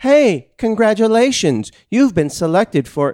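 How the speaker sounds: shrill, blaring, very high, loud automated robocall voice. Retelling how a caller's line sounded to them: robocall voice. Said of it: "I thought you said it like a robocall".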